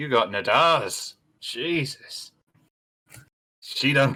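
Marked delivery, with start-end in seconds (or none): 0.0-2.3 impressed tone after a whistle. Narrator voices a man behind a desk reacting to the party, impressed, after a whistle. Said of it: "he just sort of whistles, going".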